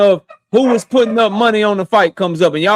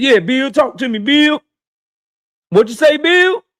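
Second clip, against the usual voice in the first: sarcastic, taunting put-on banter; 4 semitones higher than usual. Mocking how they get bill on the phone: mocking imitation of a phone call. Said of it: "y'all might get him on the phone and be like".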